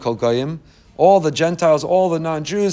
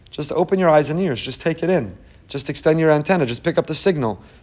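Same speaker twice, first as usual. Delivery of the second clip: ordinary talk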